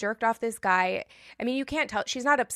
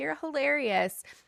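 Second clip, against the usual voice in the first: put-on words broken by laughter, pitched up; 6 semitones higher than usual. Retelling a scene where one character reacts to another: imitating someone laughing while talking. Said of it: "Melissa is just laughing like".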